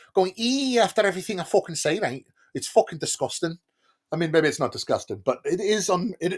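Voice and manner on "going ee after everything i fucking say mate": put-on Liverpool Scouse accent, pitched up, ee endings. Showing how people in Liverpool talk, in a put-on Scouse accent. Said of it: "I don't sound like this".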